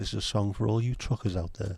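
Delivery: soporific, sleepy late-night radio DJ voice. Speaker jokingly playing a late-night radio DJ, soporific late-night radio DJ voice. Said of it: "me soporific um, late night radio D J".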